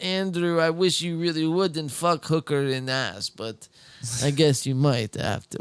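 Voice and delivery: put-on Russian accent. Imitating a man's mother talking to her son, in a russian accent. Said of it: "That was a good Russian accent".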